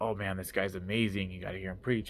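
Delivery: ordinary delivery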